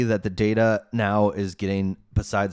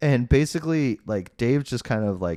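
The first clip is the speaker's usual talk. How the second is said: ordinary delivery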